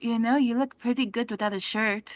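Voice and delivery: whispering in a character voice. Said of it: "She was whispering in his ear".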